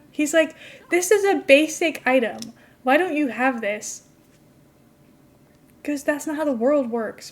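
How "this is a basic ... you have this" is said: irritated, put-out, annoyed complaining. Retelling what an annoyed customer said about a missing item: imitating an annoyed customer. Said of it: "he gets so, like, annoyed".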